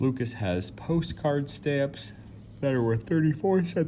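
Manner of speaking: spoken through a yawn. Reading a math word problem to the class, speaking through a yawn. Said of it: "Oh my gosh, I'm yawning".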